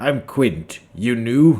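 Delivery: put-on loud, wheezy, gritty voice. Storyteller voices a shopkeeper greeting the listeners, wheezing Quint voice. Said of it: "He wheezes it uh".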